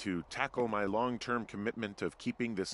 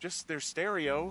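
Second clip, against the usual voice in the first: defensive, slightly higher voice; 7 semitones higher than usual. Questioned about girls whose stuff they destroyed, admitting it: defensive. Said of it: "Don't get defensive".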